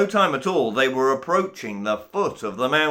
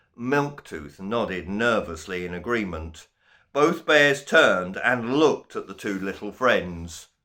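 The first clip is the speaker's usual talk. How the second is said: plain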